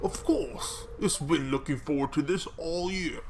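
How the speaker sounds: muffled character voice. Voicing the governor's reply to the soup-tasting request, in a cotton-mouthed Godfather voice. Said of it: "that um Godfather voice where he's got the cotton balls stuffed in".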